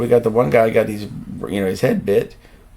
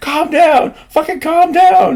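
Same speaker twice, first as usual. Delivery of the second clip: shrill, loud, very high-pitched screaming; 6 dB louder than usual. Retelling people screaming at others to calm down, imitating someone screaming. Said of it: "they're like screaming at them to calm down".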